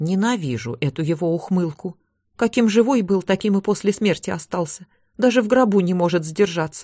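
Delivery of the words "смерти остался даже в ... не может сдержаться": ordinary delivery, nothing marked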